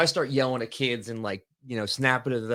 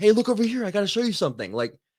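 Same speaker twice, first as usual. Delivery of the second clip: very high, insistent, urgent voice; 10 semitones higher, 4 dB louder than usual. Showing how to get attention the way a kid would, in an urgent voice. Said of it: "use like your urgency voice".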